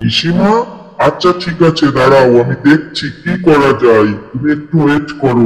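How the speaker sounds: very low, deep gorilla voice.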